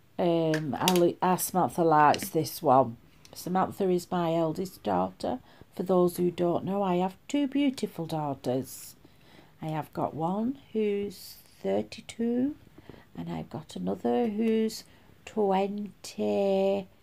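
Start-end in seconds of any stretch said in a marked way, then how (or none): 9.7-16.9 each word drawn out, dead slow, deliberate. Telling the daughters' ages while trying to remember: saying it dead slow. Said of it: "I'm saying it dead slow".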